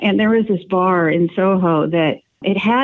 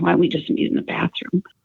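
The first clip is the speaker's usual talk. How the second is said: put-on seductive tone, quieter; 4 dB quieter than usual. Retelling an invitation to a handsy man: imitating a sexy tone. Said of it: "I said it kind of sexy".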